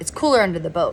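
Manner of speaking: ordinary delivery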